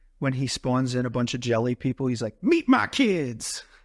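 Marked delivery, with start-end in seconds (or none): 2.4-3.7 put-on weird Southern accent, pitched high. Recounting a favourite character's line to co-hosts, in a weird southern accent. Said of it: "in like a weird southern accent".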